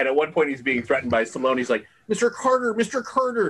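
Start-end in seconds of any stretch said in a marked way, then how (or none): 2.1-3.5 put-on very high, squeaky, forced American accent with hard R's. Retelling a film scene where an actor fakes an American accent: Alan Cumming forcing American accent. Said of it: "trying to hit the R's so hard".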